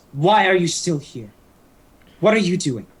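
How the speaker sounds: irritated, demanding tone. Voicing a character who glares up at the players: glaring, irritated question. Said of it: "she glares up and goes".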